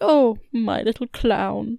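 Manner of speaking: very slow, lingering, fond and doting motherly tone. Retelling a film scene where a mother strokes a picture: imitating a mother's fond tone. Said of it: "when she's using that tone and strokes the picture".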